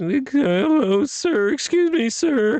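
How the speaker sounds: put-on very high, breaking, cracking pubescent teen voice. Describing how they sounded after losing their voice, the pimply kid from The Simpsons voice. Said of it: "I was speaking like the pimply kid from The Simpsons".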